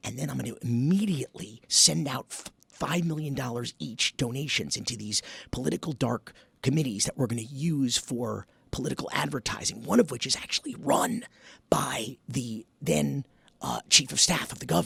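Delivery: hushed whisper. Demonstrating a whisper test with a suspicious example: whispering. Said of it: "we whisper something".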